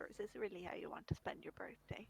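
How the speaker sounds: low, hushed voice, almost a whisper. Game master voicing Radel, in Radel's low near-whisper. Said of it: "would say in a low voice, almost a whisper".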